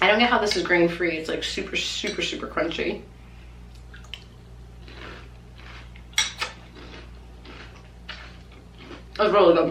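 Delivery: talking with mouth full. Tasting a crunchy cocoa snack, talking with mouth full. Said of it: "people are super triggered when people talk with their mouth full, so I apologize".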